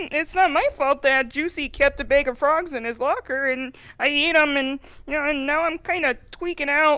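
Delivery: very low, soft, deep froggy voice. After turning into a frog, she answers her friends; frog voice. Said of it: "do you have to talk like that?".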